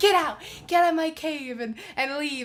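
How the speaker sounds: furious, loud, exploding angry outburst. Retelling a movie scene where a character blows up: imitating an angry outburst. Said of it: "After he blows up".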